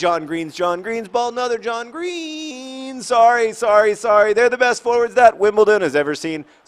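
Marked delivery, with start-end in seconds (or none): 0.0-3.0 voice cracking, "Green" drawn out. Speaker commentating a football match, voice cracking. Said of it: "my voice cracking like a pubescent boy".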